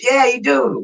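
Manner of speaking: mock sarcastic tone. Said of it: "I say it sarcastically".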